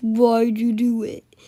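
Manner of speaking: deep, low teacher voice, very slow. Retelling what the teacher asked after a rock was thrown: imitating teacher's low-pitched voice. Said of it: "in a low pitched voice".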